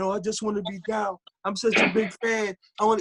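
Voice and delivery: mock high, tearful, near-crying pleading tone. Retelling how a fan in the corner pleaded: imitating someone begging and crying. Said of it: "he's begging".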